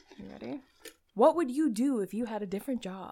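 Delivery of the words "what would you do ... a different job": quiz-host announcer delivery. Reading out the next question to the other speaker, in announcer voice. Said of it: "I'm also going to be doing my announcer voice".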